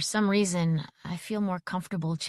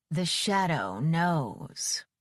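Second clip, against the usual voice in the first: full, deep, theatrical, dramatic put-on voice. Prompted by the narrator, a man says the line; whole deep voice. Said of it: "with the whole deep voice and everything".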